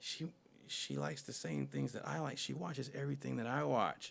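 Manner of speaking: hushed, soft murmur under the breath. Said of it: "she says like really low to herself".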